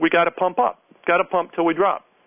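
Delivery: ordinary talk, nothing marked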